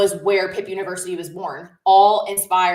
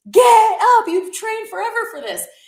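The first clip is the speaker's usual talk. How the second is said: mock very high, urging scream; 4 dB louder than usual. Spectator at mile twenty-six retelling shouting at struggling marathon runners: retelling screaming over a railing. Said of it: "I'm like screaming over the railing".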